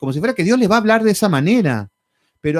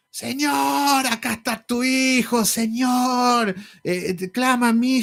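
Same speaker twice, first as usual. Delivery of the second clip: mock very slow, high yelling, "señor" stretched; 6 semitones higher, 4 dB quieter than usual. Imitating people who pray to God: imitating people shouting prayers. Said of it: "pero a los gritos".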